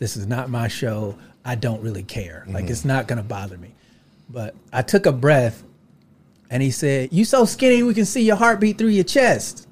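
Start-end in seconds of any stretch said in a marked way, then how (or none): 7.1-9.5 jeering, pitched-up, mocking heckler's taunt. Speaker retells what a heckler said to him, retelling a heckle. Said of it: "heckling me".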